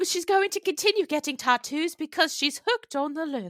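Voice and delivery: put-on British accent. A speaker retells what a woman said about her tattoos: British accent impression. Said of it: "thank you for letting me do my British accent".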